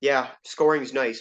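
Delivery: mock-sarcastic, acted-out sarcastic tone. Speaker imagining a player's answer to a reporter's question, retelling a sarcastic remark. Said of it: "really sarcastically saying".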